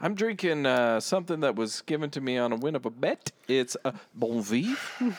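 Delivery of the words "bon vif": "bon vif" said the French way. Naming a drink won on a bet, with a french accent on bon vif. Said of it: "I said it with a French accent".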